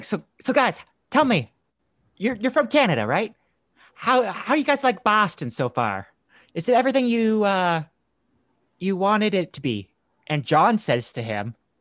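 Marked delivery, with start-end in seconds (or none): 0.0-9.9 put-on Boston accent, higher. Retelling what a man asked the canadian visitors, imitating a boston accent. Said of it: "he had the accent and everything".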